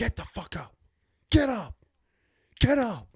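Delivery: screaming, repeated, very high and loud. Retelling a coach on court ordering a hurt player: imitating someone screaming. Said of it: "starts screaming at Jason".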